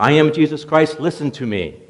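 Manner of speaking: loud, high-pitched shout to be heard. Telling a joke, as Michelangelo calling again to a woman who doesn't hear: shouting. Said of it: "so Michelangelo shouts".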